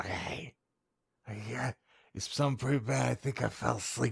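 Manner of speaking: confiding, hushed conspiratorial voice. Retelling what the fiancée said on coming back: imitating a conspiratorial tone. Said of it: "she conspiratorially is like".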